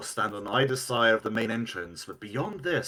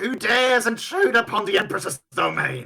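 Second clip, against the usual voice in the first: screaming, much higher, slower; 12 semitones higher, 7 dB louder than usual. Acting out a voice line heard spoken in Thessalonian: screaming out. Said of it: "And it's screaming out".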